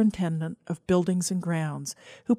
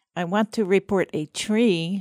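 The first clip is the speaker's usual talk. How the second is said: whiny, pinched, disguised voice. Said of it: "in a whiny, pinched voice".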